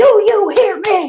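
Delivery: very slow, drawn-out, high-pitched preacher holler. Retelling a church service, imitating the pastor yelling: imitating the pastor yelling. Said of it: "the pastor starts yelling at everybody".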